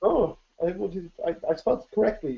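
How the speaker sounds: high-pitched, fast, rattled-off indignant tone.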